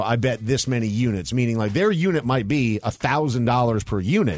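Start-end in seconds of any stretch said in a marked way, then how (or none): none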